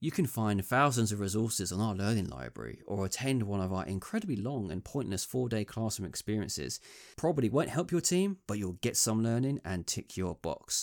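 ordinary talk

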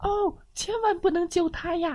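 very high, frightened cry of terror. The rooster sees a red fox drifting toward them and cries out; frightened cry. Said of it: "惊恐的叫了起来".

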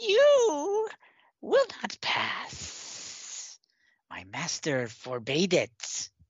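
high, slow, giddy, gleeful monster voice. Voicing a creature the party negotiated with before: giddy whisper. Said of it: "the giddy whispers of the creature".

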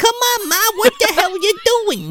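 put-on very high-pitched little old woman voice. Describing a movie scene, retelling how a tiny old woman talks, Hattie impression. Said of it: "talks like this the whole fucking time".

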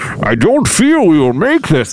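very slow, dragged-out, crackling voice. Showing the other speaker how to do a good Bane, with a crackle. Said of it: "to do a good Bane".

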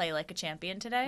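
ordinary talk, nothing marked

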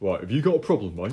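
put-on big strong man voice. Voicing a big strong man confronting a player: voicing a big strong man. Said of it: "he comes over, he's like".

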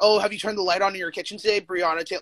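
normal talking voice

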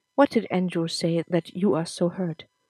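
ordinary delivery

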